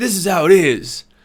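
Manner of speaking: put-on loud, forceful, aggressive tone. Retelling a recurring childhood vision of a ghostly old man: imitating an aggressive old man. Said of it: "he was always very aggressive".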